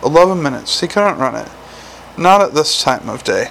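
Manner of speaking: plain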